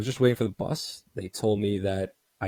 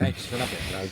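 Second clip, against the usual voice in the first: ordinary talk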